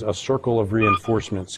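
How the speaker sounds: ordinary delivery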